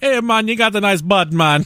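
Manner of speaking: put-on Jamaican patois accent. Speaker acts out how his wife talks to him: Rasta voice. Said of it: "start speaking in a Rasta voice".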